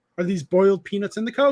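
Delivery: ordinary talk, nothing marked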